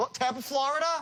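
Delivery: pitch rises at the end of Florida. Demonstrating a sales call to listeners, rising pitch at the end. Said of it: "by raising up my voice at the end".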